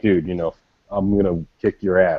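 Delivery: normal talking voice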